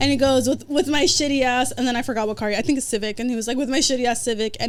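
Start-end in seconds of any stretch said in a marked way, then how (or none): none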